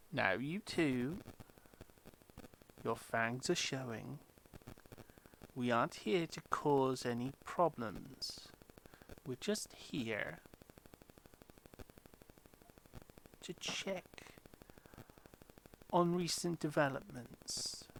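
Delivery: gentle stage whisper. A game master voicing a new character who speaks from behind them: gentle half-whisper. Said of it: "gently um, whispers to them".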